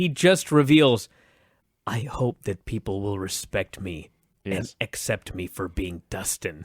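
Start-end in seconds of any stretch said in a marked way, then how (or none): 1.9-6.6 very low, very hushed, sad voice. Retelling what a man revealed while sitting there, in a quiet, sad voice. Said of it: "in the quiet, sad voice".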